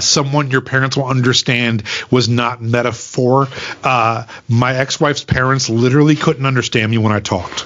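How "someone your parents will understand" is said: normal talking voice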